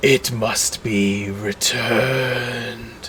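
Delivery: soft, rasping creature voice, echoing out. A storyteller voices a creature exploding into dust, raspy echoing voice. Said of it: "you hear its raspy voice echo out one last time".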